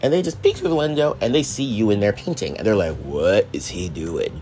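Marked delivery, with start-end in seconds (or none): 3.0-4.4 suddenly changed voice, low, slow, drawn-out. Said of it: "I don't know why my voice just changed".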